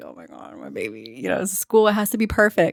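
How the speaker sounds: mock-nervous, worried tone. A mother retells her morning before her son's first school day; retelling her nervous worry. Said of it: "I was already nervous".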